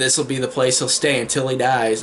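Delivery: ordinary delivery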